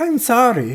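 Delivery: very loud, high-pitched, put-on German accent. Voicing a nervous stable worker in a game: German accent. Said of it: "let me get my German on here".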